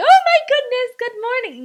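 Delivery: acted, very high, loud, bubbly, peppy sing-song. Describing the coworker not wanted, imitating a peppy greeting. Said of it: "I'm not gonna be with a peppy".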